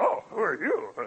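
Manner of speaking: slow, drawn-out, deliberate demon voice. Reading a Bible passage, voicing the evil spirit: demon voice. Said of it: "that's my best demon".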